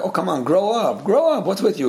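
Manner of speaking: mock dismissive, brushing-off tone. Quoting how some people react, mock-dismissive. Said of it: "some people say it in a very dismissive way".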